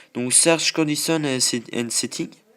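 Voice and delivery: bad heavy French accent on English. A French speaker reads out English settings names, poor English accent. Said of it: "mon accent anglais laisse vraiment à désirer".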